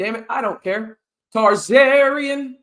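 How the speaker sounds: loud, full-throated yell, stretched long. Host shares good news with listeners: yelling. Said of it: "Sorry for yelling there".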